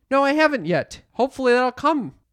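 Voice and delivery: very loud, very high-pitched, carrying voice. Retelling a reply meant for the manicurist to overhear: retelling saying it very loudly. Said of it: "And I go very loudly so that my manicurist hears".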